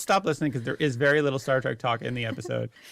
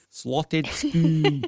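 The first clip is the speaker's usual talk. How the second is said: put-on Scottish accent on the phrase; 3 semitones higher than usual. Showing the one phrase that can be said in a scottish accent. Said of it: "the most Scottish phrase ever".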